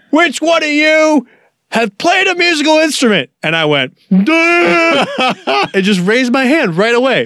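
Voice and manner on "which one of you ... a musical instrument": loud barking drill-sergeant yell, pitched up. Retelling what they asked the group, doing an R. Lee Ermey impression. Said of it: "doing like their best Arlie Ermy impression".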